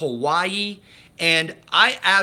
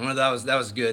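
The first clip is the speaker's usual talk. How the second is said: normal talking voice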